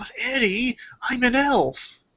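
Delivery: utterly sincere, earnest, very high, very slow, drawn out. Quoting a line from a show: imitating Ed's sincere delivery. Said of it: "It's so sincere".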